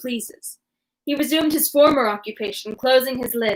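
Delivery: ordinary delivery, nothing marked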